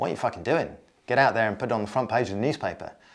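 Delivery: mock Australian accent, quick. Speaker addresses any listeners who own a newspaper; Rupert Murdoch Australian accent. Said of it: "I don't know why I'm doing an Australian accent".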